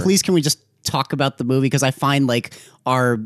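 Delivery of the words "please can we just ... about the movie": ordinary talk, nothing marked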